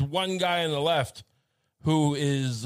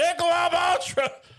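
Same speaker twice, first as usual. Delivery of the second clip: mock, very high, shrill, all-out screaming; 14 semitones higher, 4 dB louder than usual. Imagining being dressed like Uncle Sam, the speaker does pretend screaming. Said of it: "And I'm just screaming".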